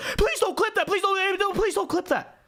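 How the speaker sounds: panicked pleading. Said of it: "so panicked about any of that".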